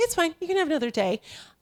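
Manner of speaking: gentle, sweet voice. Retelling someone granting an extra day: imitating someone speaking sweetly. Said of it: "And very sweetly".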